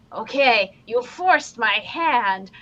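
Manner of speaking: very slow cartoon voice, every word stretched out. Retelling a reenacted movie scene, shouting an order: Doofenshmirtz voice. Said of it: "he was in Doofenshmirtz's voice".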